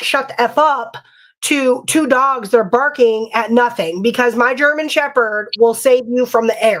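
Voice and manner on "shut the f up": acted, angry half-shout, cursing kept mild. Woken at night, retelling yelling at two barking dogs: retelling a yell.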